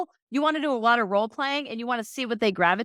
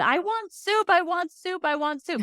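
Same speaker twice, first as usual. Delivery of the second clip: put-on repeated high, drawn-out toddler tantrum wail; 6 semitones higher than usual. Retelling how a young son screamed at his grandfather: imitating a child screaming. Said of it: "he's screaming at my dad".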